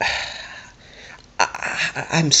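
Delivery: halting stammer, very slow and breathy. Trying to finish a thought about the algorithm, stuttering. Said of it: "fucking stuttering like I have".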